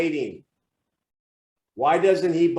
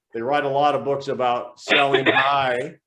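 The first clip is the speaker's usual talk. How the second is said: ordinary talk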